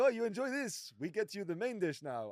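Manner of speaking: terrible put-on Iranian accent. Retelling what the man serving the meal said, in a terrible Iranian accent. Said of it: "that's a terrible Iranian accent".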